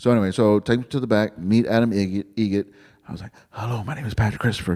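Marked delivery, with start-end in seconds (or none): 3.5-4.7 quick, fast, hushed half-whisper. Retelling meeting someone backstage while a show was on, the speaker re-enacts half-whispering. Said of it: "because I'm whispering".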